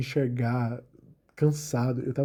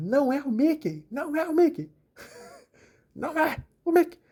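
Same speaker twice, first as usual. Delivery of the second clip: put-on very high, shrill little-kid yelling shriek; 14 semitones higher than usual. Retelling a small child at a party yelling: imitating a child shouting. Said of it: "ele começou a gritar".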